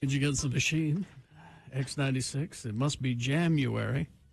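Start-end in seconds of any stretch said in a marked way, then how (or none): 1.7-4.1 put-on FM radio DJ voice, much louder, slower. Slipping into an FM radio DJ voice in the middle of a chat. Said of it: "I was being an FM radio DJ".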